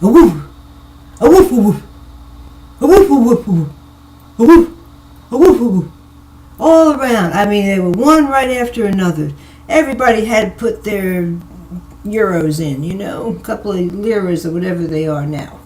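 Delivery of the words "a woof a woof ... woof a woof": put-on booming Italian-accented barking. Jet-lagged at night, imitating the dogs barking to each other, Italian-accented barking. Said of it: "they talk with an Italian accent".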